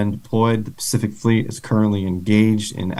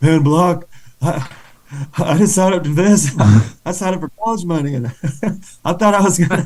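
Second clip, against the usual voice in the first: acted, high, weepy, tearful complaining tone; 7 semitones higher than usual. Retelling how upset privates complained about basic training: imitating crying privates. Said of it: "they were crying like".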